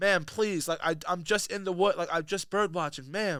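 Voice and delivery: mock courteous, very polite, deferential pleading tone. Retelling a recorded confrontation, imitating the bird watcher: imitating a polite man. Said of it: "the most polite man".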